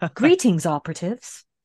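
very soothing, suave spy voice. Describing how the mission greetings sound in their head, soothing 007-esque Bond voice. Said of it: "I just hear it in the very soothing, oh, 007-esque".

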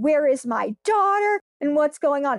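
screaming, calling out, but held back. Speaker retelling a 911 call, imitating her mother screaming back on the phone. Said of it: "My mom starts screaming back".

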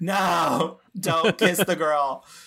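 very slow yell with a long stretched-out no. Retelling a reaction to a movie scene: retelling screaming at the screen. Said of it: "I'm screaming at my, my computer".

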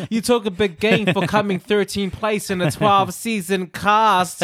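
ordinary talk, nothing marked

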